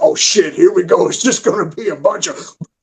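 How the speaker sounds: put-on grumpy old man voice. Retelling what an older man would say in meetings: imitating a cantankerous old man. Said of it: "He was cantankerous".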